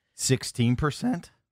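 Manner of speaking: voice cracking. Answering a question about a discount code: voice cracking. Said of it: "I just cracked".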